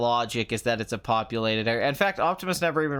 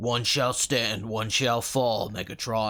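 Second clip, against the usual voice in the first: slow, level, monotone voice pushed from the throat; 3 semitones lower than usual. Retelling a movie scene about a robot leader's line: Optimus Prime voice. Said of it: "doing the Optimus voice in my throat".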